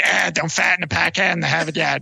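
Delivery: Boston accent with a creaky voice.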